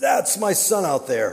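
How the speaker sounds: high-pitched cry. You are telling how a father running for his son answered the security people chasing him; retelling a yell. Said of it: "he yells back".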